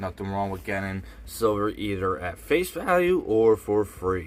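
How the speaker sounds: voice cracking with a wide pitch jump.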